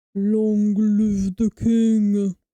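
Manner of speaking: very deep, slow booming voice, "king" drawn out. Quoting a film line while trying for the deepest voice possible. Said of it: "I'm gonna try to my deepest voice".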